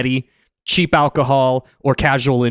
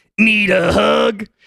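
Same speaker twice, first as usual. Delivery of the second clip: gravelly, pitched-up voice, ground out; 8 semitones higher than usual. Asked for a clean second take, the speaker redoes the catchphrase: gravelly Bear Hugger voice. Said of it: "It's so gravelly".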